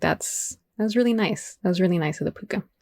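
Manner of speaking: ordinary talk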